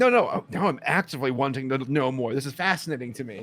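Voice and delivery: ordinary talk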